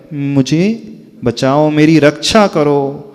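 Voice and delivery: normal talking voice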